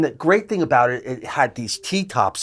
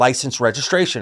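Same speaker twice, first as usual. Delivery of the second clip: ordinary delivery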